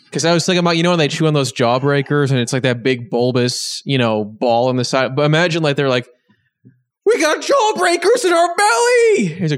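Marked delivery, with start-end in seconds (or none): 7.0-9.2 goofy cartoon character voice, higher. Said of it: "that was the voice".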